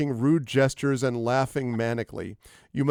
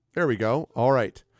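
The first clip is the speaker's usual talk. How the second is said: normal talking voice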